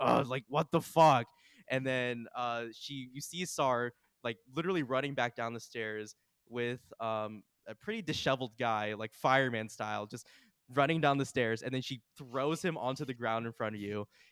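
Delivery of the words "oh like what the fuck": disgruntled voice, louder. Narrating a game, Alvis calls from upstairs when someone goes to fetch him; disgruntled Alvis voice. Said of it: "you hear a disgruntled voice from upstairs".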